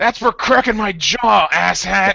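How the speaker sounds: loud drawn-out yelling. Voicing a character taunting an enemy he set on fire: shouting up at him. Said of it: "Styx just shouts up at him".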